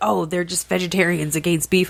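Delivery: ordinary delivery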